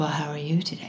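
creepy, hushed raspy voice. Retelling a creepy phone call, the speaker voices the caller: creepy raspy man voice. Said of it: "a man in a raspy voice saying".

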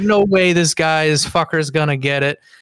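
ordinary talk

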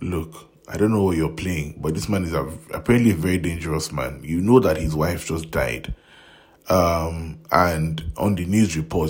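ordinary delivery

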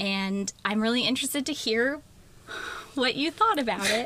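careful, unsure, tentative and hesitant. Asking someone who read the recommended book what they thought, tentative. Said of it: "I hear the tentativeness in your voice".

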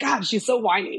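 ordinary talk, nothing marked

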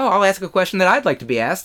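normal talking voice

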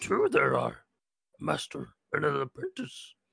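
put-on old creature character voice. A player answers a trivia question about the Sith, Yoda impression. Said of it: "That was my Yoda".

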